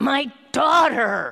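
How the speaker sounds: put-on desperate terrified cry, very loud and high. Speaker retelling a story, voicing a powerful father's cry: acting out a terrified cry. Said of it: "Hear the terror in his voice".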